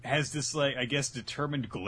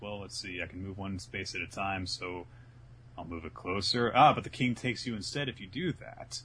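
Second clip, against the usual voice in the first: ordinary talk, nothing marked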